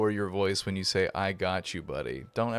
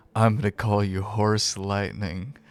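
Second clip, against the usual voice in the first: hushed, whispering voice; 6 dB louder than usual. A rider whispers a new name into the horse's ear, whispering. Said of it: "I'm like whispering into the horse ear".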